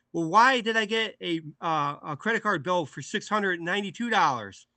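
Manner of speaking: angry dad voice. Retelling a film scene where the dad confronts his son: imitating an angry dad. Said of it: "getting pissed at him".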